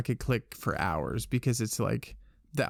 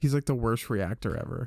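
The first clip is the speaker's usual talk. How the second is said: ordinary delivery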